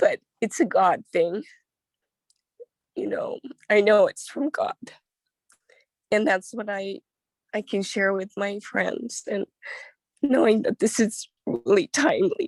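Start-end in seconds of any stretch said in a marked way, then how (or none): 0.0-4.7 tearful speech, crying through the words. Speaker sharing a personal reflection, crying while speaking. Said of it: "I'm crying".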